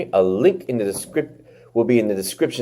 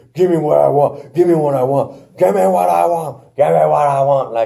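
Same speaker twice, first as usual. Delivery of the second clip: put-on high screaming, over and over; 6 semitones higher than usual. Speaker recapping Batista arriving with bodyguards, imitating Batista screaming. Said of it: "Kept screaming".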